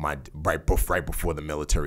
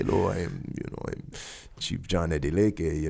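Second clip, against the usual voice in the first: put-on suave British man's accent, slower. Retelling how a man approached the speaker's mom, Chief John Adeleke's suave British accent. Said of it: "suave British accent".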